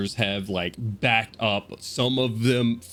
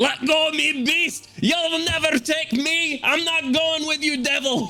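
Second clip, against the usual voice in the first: very high, struggling, defiant dwarf voice; 3 dB louder than usual. Voicing a dwarf punching inside a frog's mouth: voicing the struggling dwarf. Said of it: "as he hits you in your".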